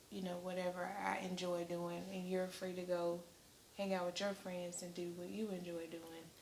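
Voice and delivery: hushed intimate half-whisper, very soft and quiet. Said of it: "Why are you whispering?".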